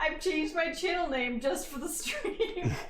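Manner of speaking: high, slow speech broken by helpless laughter.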